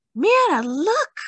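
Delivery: sharp, very high gasp. Mama sees a butterfly leave Dahlia's hair, gasping. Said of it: "Mama gasped".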